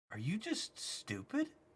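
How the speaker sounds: puzzled, slow, hushed whisper. Voicing a guard who stares puzzled at a player walking past: puzzled guard. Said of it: "The guard looks at you, puzzled ... goes".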